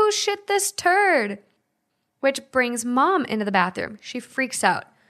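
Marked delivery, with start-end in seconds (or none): 0.0-1.4 high, slow scream.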